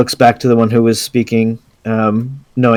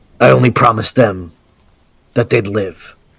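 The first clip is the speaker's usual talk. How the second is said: voice dropped down low. In a tabletop game, a character looks over to a companion and speaks in a lower voice. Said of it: "in a lower voice".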